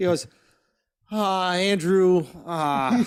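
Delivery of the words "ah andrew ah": bashful, sheepish, hemming aw-shucks tone. Retelling a call from Mark, in Mark's put-on aw-shucks voice. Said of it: "in his aw shucks voice".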